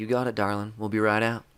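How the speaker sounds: very smooth, easy, silky voice. Retelling what a voice on the other end of the line said: very smooth voice. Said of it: "very smooth voice say".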